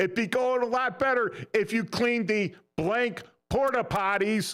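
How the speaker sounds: high-pitched, full-volume shout at the top of the lungs. Retelling answering a sergeant major in line: retelling a shout at full volume. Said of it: "I shout at the top of my lungs".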